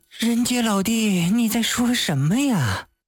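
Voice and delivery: ordinary talk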